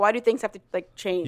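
ordinary talk

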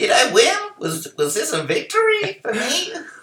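very high, cranky, stammering voice. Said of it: "cranky voice".

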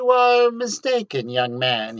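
sweet, persuasive tone. A man tells a young man he is mistaken, in a honeyed voice. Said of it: "he said in a honeyed voice".

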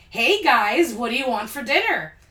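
loud, overly excited voice. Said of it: "in an overly excited voice".

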